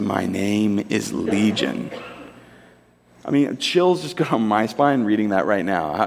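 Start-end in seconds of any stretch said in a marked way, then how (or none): 0.0-1.9 very slow, hushed, low, creaky demonic murmur. Imagining the scene, the speaker voices the man suddenly speaking in a quiet demonic voice. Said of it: "in this demonic voice just quietly says".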